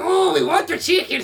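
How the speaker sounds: very high, very loud, exaggerated Mexican accent. Acting out a group of kids in a bit, dated 70s-80s mexican accent. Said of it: "70s and 80s Mexican accent you could have done".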